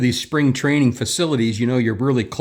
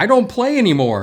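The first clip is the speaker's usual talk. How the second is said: mock hollering, very high pitched; 9 semitones higher than usual. Tell a story about shagging balls at spring training, imitating someone yelling back. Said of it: "he yells back".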